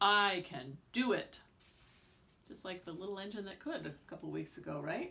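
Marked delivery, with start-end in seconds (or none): 0.0-1.4 very slow, loud, confident brave voice. Showing different voices for reading books aloud, using a brave voice. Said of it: "A brave voice for an inspiring story".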